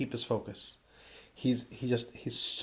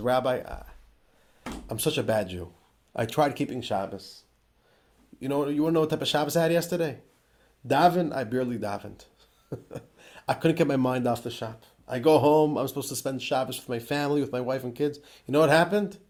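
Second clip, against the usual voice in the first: mock, choked-up voice catching with emotion, pleading. Telling a story, the speaker acts out a man speaking to the rabbi: imitating choking up emotionally. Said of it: "he's emotionally choking up and he says".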